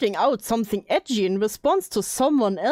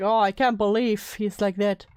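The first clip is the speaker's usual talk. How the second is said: ordinary talk, nothing marked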